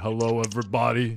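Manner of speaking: deepened, tough-guy voice with New York tinge. Copying another guest's greeting: imitating a deepened new york voice. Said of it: "you really deepened it up for that one".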